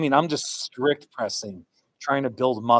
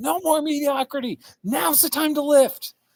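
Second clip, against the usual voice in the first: mock very high, pumped-up rallying yell. Recounting what they screamed before lifting two days ago, retelling a shout. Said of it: "I was just shouting".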